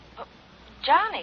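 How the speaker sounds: sounding surprised. Answering a call and hearing who it is: sounding surprised. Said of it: "You sound surprised".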